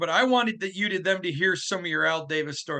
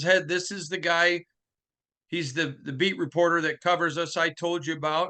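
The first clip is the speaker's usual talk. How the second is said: ordinary delivery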